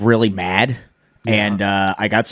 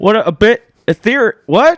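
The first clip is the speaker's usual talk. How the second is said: put-on elderly politician voice, higher and louder; 11 semitones higher, 6 dB louder than usual. Doing a Joe Biden impression for the others: Joe Biden impression. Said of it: "That's not a bad impersonation".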